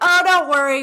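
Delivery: put-on New Jersey accent, loud. Retelling sympathetic fellow plane passengers, imitating a new jersey accent. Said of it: "with their New Jersey accent".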